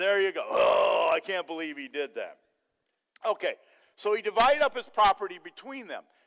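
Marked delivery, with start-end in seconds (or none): 0.5-2.4 mock disapproving groan, lower. Retelling how the Pharisees reacted to the son: imitating groaning Pharisees. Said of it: "you didn't do it like a Pharisee".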